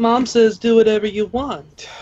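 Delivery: mocking, very high-pitched girly voice. Asked what Mom says, the player character answers in a mocking female tone. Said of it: "in a mocking female tone".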